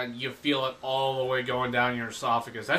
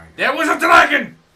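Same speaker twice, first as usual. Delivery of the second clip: shrill, very loud, high, insistent yell; 12 semitones higher, 12 dB louder than usual. Insisting there was a dragon when told there was none: yelling. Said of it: "why are you yelling?".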